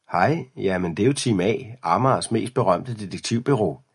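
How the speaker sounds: plain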